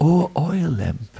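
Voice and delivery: sweet, sweetly spoken voice. Narrating a story, newborn Krishna addresses an oil lamp in a sweet voice. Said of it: "in a sweet voice".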